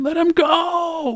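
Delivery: put-on young boy's very high, drawn-out shriek. Voicing a younger boy pounding a thin man's leg: screaming. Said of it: "just screaming".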